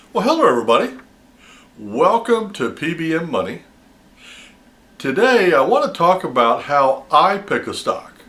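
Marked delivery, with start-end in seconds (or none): 6.6-8.0 leaning hard on the word "I". Opening a talk on picking stocks, strong stress on i. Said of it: "I overemphasize that word for a reason".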